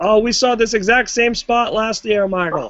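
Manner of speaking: put-on slow, drawn-out, high ringside commentator holler. Retelling a commentator's line about a repeated spot: imitating JBL yelling. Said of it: "J B L yells, like".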